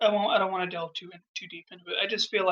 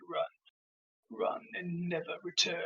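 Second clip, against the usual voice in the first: very slow, breathy whisper, dragging every word; 9 dB quieter than usual. Acting out a movie scene, doing Scar's voice. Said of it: "I can't do that perfect voice".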